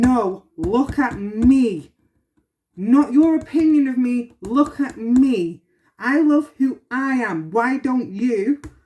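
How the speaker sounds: mock shouting and screaming, slow and drawn-out. Retelling standing their ground against others, retelling a shout. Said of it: "I'm shouting and screaming saying".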